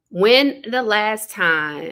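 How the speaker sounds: slow, loud, careful reading.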